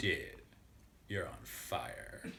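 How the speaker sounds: hushed, whispered, put-on Valley Girl voice. Retelling Jerry talking to a guy, in a Valley Girl impression. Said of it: "his like best Valley Girl impression".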